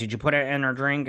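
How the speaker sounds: ordinary talk, nothing marked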